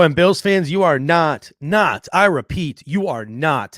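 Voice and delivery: livid, heated, insistent, hammered-home delivery. Speaker warns Bills fans about today's inactive report, shouting as loud as possible. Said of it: "I am saying this as loud as I can".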